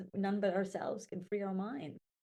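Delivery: ordinary talk, nothing marked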